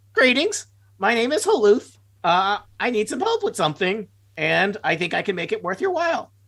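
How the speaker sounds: high, bird-like talking-raven voice. Voicing a raven character in a role-play scene, in a raven voice. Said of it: "I'll do a raven voice".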